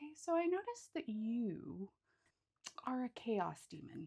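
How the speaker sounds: very soft, quiet, composed, gentle calm voice. Retelling how someone calmly stopped the speaker: imitating gentle speech. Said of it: "just like very gently was like".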